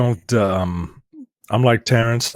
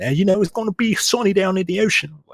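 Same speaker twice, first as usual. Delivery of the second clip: put-on heavy, broad Baltimore accent, very high pitch; 10 semitones higher than usual. Retelling a weatherman's forecast: imitating Marty Bass's Baltimore accent. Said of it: "his big ass Baltimore accent".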